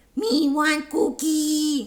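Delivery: loud put-on puppet monster voice. Trying the blue Muppet's catchphrase as an impression, Cookie Monster voice. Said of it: "I'm gonna try to do the impression".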